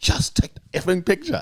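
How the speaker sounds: very high-pitched, mild half-yell. Retelling a royal yelling at a photographer: imitating someone yelling. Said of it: "he's yelling on his finger".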